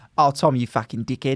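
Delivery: rough, fake put-on Australian accent. Trying out accents, this one Australian: put-on Australian accent. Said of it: "This would be my Australian accent, maybe".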